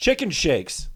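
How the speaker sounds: mock deadpan, dry, totally unbothered, dead serious. Retelling a security guy's answer about what he eats: imitating a deadpan reply.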